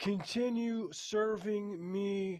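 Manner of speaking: high, commanding god voice. Voicing a deity in the story, loud deity voice. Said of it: "he says in a loud voice".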